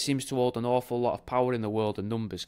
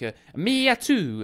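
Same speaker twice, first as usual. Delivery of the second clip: Italian-American mobster film-style accent; 8 semitones higher, 6 dB louder than usual. Reading a car's number plate as a phrase, in a mock italian accent. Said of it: "but in an Italian sort of way".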